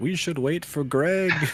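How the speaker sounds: booming echoing voice. The narrator voices the voice in the sky within the cave: booming, echoing voice. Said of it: "The booming, echoing voice through the cave says".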